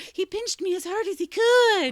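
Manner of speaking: acted shrill, very high, loud, drawn-out whining. Retelling a brothers' fight over a swing: imitating a whiny voice. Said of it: "gets to the whiny voice of".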